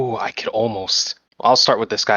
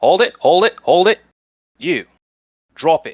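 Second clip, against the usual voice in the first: urgent, halting, loud, high-pitched call-out; 6 semitones higher, 5 dB louder than usual. Voicing Liam running out with hands open: in character as Liam. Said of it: "Liam kinda runs out, uh, hands out open, it's like".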